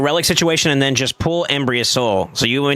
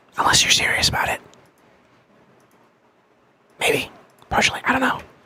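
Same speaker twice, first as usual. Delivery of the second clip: whispering, much higher pitch; 11 semitones higher than usual. Asmr host talks to the listener, whispering. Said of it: "Why am I whispering?".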